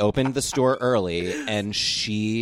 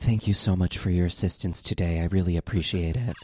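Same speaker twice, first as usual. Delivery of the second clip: creepy put-on voice; 3 semitones lower than usual. Retelling a woman's thanks, the speaker quotes her in a really creepy voice. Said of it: "in a really creepy voice".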